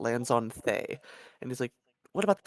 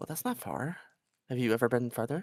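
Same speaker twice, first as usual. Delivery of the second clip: intrigued, wondering, fascinated and curious tone. Retelling how a character reacted to a place: imitating a fascinated tone. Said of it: "He's, like, fascinated".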